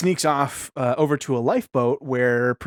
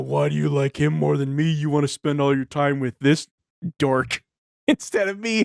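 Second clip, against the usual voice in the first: put-on belligerent drunk ranting, angry. Retelling how a drunk man confronted the nerd table, mock belligerent drunk. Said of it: "belligerent drunk".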